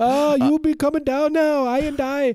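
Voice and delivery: very high, slow put-on Jamaican accent. Joking about a psychic with a fake Jamaican accent: Miss Cleo impression. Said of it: "famous singer Miss Cleo".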